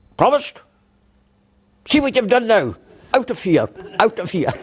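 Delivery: high, sharp, snapped telling-off.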